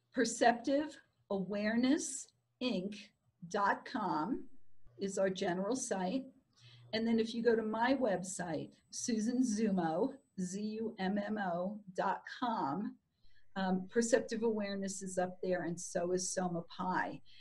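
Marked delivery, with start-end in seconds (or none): 0.2-13.0 slow, clear, careful, deliberate spelled-out speech. Giving website addresses after being asked to speak slowly: slow and clear. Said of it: "say it slowly and to the camera and clearly".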